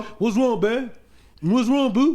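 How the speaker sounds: put-on dim-witted guy voice. Speaker demonstrates the stance the other speaker recommends: dumb dude voice. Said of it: "you just got to do the dumb dude stance".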